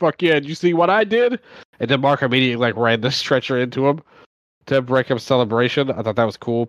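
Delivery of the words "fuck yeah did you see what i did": cocky, smug gloating, pitched-up. Recapping a match, retelling a performer's celebration: retelling a smug taunt. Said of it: "He was taunting and like being like".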